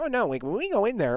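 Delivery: chipmunk-like high voice. Telling about a guy filling his Instagram feed, doing his Alvin and the Chipmunks voice. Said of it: "he has like the Alvin and the Chipmunks voice".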